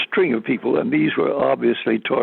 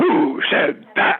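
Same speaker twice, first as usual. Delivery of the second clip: play-acted abrupt, demanding, sudden shout; 4 semitones higher than usual. Retelling a speech where the speaker suddenly turned on the crowd: imitating Khrushchev shouting. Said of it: "he now shouted".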